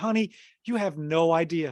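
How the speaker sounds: amused, slow, laughing through the words. Speaker retelling talking to a woman walking out of the theater, retelling laughing while talking. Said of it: "I'm just laughing, going".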